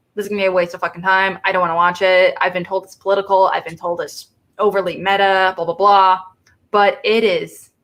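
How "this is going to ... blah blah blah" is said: usual speaking voice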